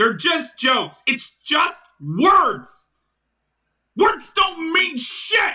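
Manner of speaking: worked-up, heated outburst rising in intensity. Arguing back after being told the jokes hurt people: heated. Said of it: "I'm sorry I got a little heated".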